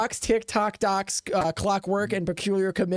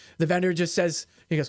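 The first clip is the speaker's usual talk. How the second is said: ordinary talk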